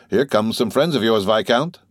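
ordinary delivery

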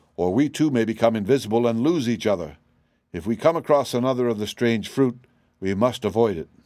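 plain

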